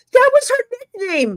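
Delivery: high, loud screaming.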